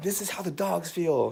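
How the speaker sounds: mad, cross, complaining outburst. Retelling a daughter's complaint while her tangled hair was brushed: imitating daughter getting mad. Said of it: "getting mad at me".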